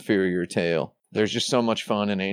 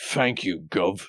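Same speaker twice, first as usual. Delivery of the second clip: put-on British accent. Joking about game characters thanking the player: British accent. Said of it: "has to say it in a British accent".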